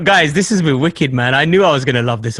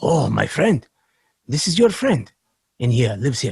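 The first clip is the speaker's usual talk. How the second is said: put-on Russian accent; 3 semitones lower, 4 dB quieter than usual. Retelling what the man dropping him off said, imitating a Russian-sounding accent. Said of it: "drop the, the accent now because I'm starting to sound Russian".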